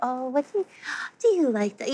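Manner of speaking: put-on gentle, soft, sweet baby talk. Parent recalling how their mom talked to the baby: imitating gentle baby talk. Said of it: "gentle, sweet tones".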